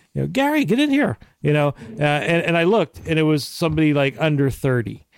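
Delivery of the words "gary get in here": terrible put-on Irish accent, pitched much higher. Retelling a stranger overheard while leaving a pub in Ireland, in a bad Irish accent. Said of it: "That's a terrible accent".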